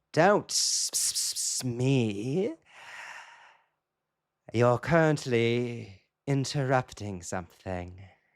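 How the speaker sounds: slow voice of a huge-fanged monster cat. Narrating a scene where a cat suddenly speaks out, voicing the fanged monster cat. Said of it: "the lips ripple across those overly sized fangs".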